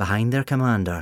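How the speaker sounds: usual speaking voice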